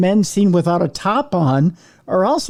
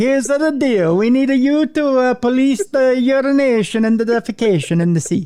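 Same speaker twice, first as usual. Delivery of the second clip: mock Italian accent, pitched high; 6 semitones higher than usual. In a comic bit, telling Cruiser what he is needed for, Italian accent. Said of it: "I know it's an Italian accent".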